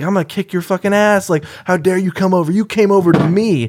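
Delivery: high, furious, violently menacing voice.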